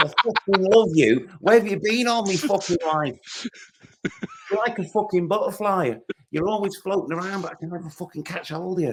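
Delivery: put-on very high-pitched Manchester accent. Retelling being kissed by Liam, the speaker does Liam's Manc accent. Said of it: "What's the what's the Manc accent?".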